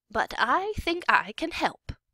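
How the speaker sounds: sunny, bright delivery. Narrator reads an old woman at the front door offering help, brightly. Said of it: "she said brightly".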